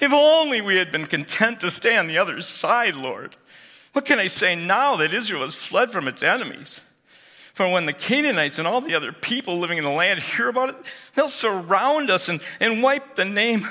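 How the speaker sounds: very high, whiny, whining lamenting tone. Retelling Joshua crying out to the Lord: put-on whiny Joshua voice. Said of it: "It has to have a whiny tone".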